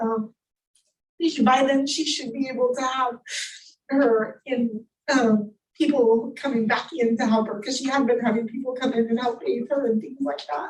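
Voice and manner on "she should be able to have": crying while speaking, tearful, breaking into a cry. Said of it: "I'm crying".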